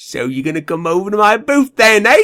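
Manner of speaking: very bad fake British accent. Quoting someone inviting the speaker over to their booth; worst American British accent. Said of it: "worst American version of a British accent".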